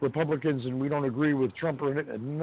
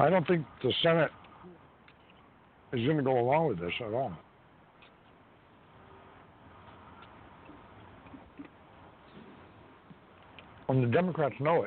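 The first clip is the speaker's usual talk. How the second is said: chewing while talking, mouth full. Speaking while snacking on peanuts, talking while eating. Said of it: "Sorry, I'm eating. I'm having some peanuts".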